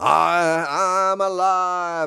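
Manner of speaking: loud, fiery preacher voice, "I'm" stretched out. Speaker shows how he should have said his lines, like a fiery preacher. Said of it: "say it like a fiery preacher".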